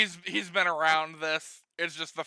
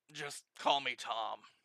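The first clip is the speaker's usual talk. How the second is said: low, soft, said through a sigh; 4 semitones lower, 6 dB quieter than usual. Voicing a soldier who tells the group what to call him: sighing. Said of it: "The soldier just sighs and he says".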